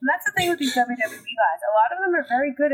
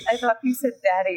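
usual speaking voice

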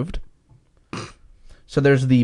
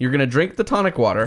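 normal talking voice

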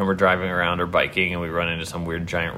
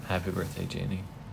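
downcast, mournful voice, soft; 9 dB quieter than usual. Wishing someone a happy birthday, in a sad voice. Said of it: "You sound so sad".

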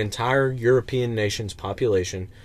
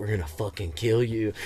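low, hushed stage whisper, close to the ear; 4 dB quieter than usual. Retelling a threat someone half-whispered in a man's ear: imitating someone half-whispering. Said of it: "whispers in his ear".

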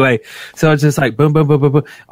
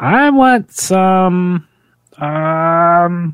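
weird, strange voice, high and slow. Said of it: "I don't know why I sound like that".

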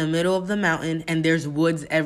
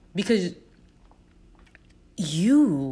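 upset, emotional and furious. Ending a podcast episode while upset: emotional and angry. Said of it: "I am just getting so emotional, so angry".

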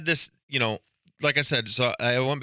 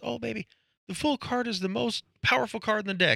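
put-on very high elderly woman voice; 10 semitones higher, 3 dB quieter than usual. Retelling what a woman told her about a card, in an old lady voice. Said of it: "her old lady voice".

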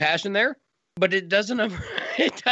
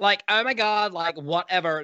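put-on Valley girl accent. Describing how characters talked, an impression in an imitated valley girl accent. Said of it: "That's my impression of a Valley girl".

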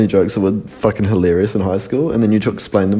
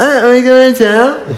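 very high, loud, silly, dopey voice; 6 dB louder than usual. Drunk, repeating a friend's question back to him: stupid voice imitating Daniel. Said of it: "I repeated what he said in a stupid voice".

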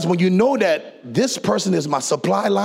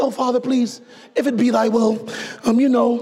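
mock-timid, put-on fearful voice; 4 semitones higher than usual. Mocking the way people pray, in a mock-timid prayer. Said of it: "We pray scary prayers".

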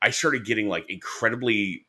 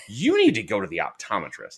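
normal talking voice

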